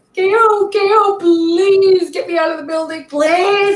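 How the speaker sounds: very high, tearful, crying, pleading voice. Retelling how a rock star begged off camera: imitating someone crying and pleading. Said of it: "he was, like, crying".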